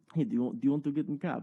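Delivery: put-on Ukrainian-accented voice. A speaker retells what a man said to him, in a Ukrainian accent. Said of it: "He said it in a Ukrainian voice".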